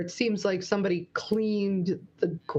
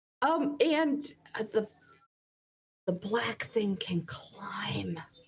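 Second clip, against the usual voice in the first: speaking in a whisper; 3 semitones higher, 4 dB quieter than usual. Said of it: "I don't know why I'm whispering".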